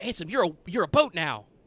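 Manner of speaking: put-on young, pre-puberty little boy voice. Imagining a line said in a child actor's voice: Haley Joel Osment voice. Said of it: "imagine, uh, pre-puberty Haley Joel Osment's voice saying".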